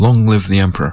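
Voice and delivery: ordinary talk, nothing marked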